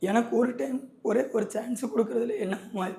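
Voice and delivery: tearful, pleading voice.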